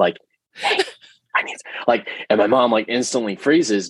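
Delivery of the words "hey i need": mock whispering. Retelling how a great grandaunt called a child over: imitating a whisper. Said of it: "she started whispering to my mom".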